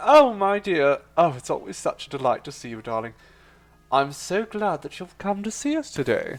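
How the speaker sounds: honeyed sweet talk. Welcoming a viewer who has joined: honeyed voice of Sir. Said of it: "the honeyed voice of Sir in your ear holes".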